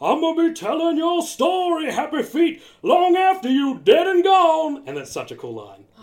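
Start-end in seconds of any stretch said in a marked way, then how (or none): 0.0-4.8 booming, high-pitched Southern preacher voice. Quoting a favourite film line: Lovelace Southern preacher voice. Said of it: "a Southern American preacher kind of feel to him".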